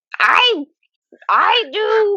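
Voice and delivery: very high-pitched comic voice pushed way up. Trying an impression when asked to do Gilbert Gottfried voice. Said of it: "can you do Gilbert Godfrey?".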